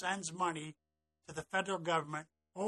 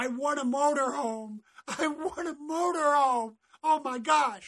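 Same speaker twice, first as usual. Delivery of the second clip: put-on scream, much higher, louder; 9 semitones higher, 8 dB louder than usual. Retelling how a woman reacted to a coffee cup prize, retelling a scream. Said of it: "she starts screaming".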